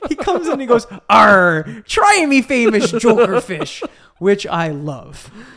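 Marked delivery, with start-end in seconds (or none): 1.1-3.8 put-on silly, loud, drawn-out pirate accent. Retelling a scene where Joker shows up dressed as a fisherman, Joker's pirate accent. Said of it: "with a pirate accent".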